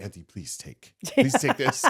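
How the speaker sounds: soft, hushed whisper under the breath. Retelling a whispered request to Auntie while passing out food: imitating own whisper. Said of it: "I'll just whisper to Auntie".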